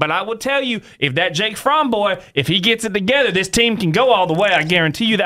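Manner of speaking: broad put-on Southern accent, laid on thick. Fan talking about a quarterback and the team, in a Southern accent. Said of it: "Southern accent".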